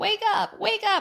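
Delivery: very high, tearful, crying, urgent voice. Retelling waking him up after the pregnancy test, acting out crying. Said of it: "I'm crying".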